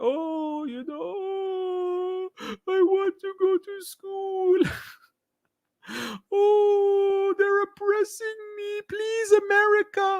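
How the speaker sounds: put-on sarcastic pleading girl voice. Mocking how girls are shown pleading for invasion: mocking imitation of crying girls. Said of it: "they bring out the girls crying about".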